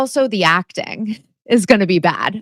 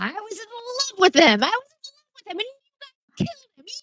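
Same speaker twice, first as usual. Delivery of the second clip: unhinged, crazed, very high-pitched and hushed; 7 dB quieter than usual. Describing a movie killer's reveal scene, mock-crazy killer confession. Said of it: "she does the whole like crazy".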